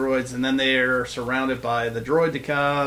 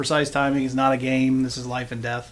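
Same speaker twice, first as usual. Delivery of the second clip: plain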